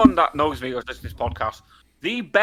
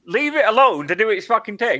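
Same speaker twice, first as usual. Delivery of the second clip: screaming, pitched high; 8 semitones higher than usual. Retelling screaming at him at a broken vending machine: imitating own past screaming. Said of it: "I'm screaming at him".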